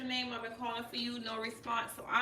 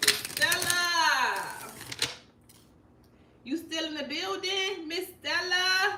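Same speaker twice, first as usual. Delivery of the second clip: loud, high, drawn-out call. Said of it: "I've been calling for you".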